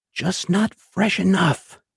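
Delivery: gentle, mild, high-pitched, slow and unhurried. Narrator voices a man leaning over the listener on the ground: soft voice. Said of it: "And in a soft voice".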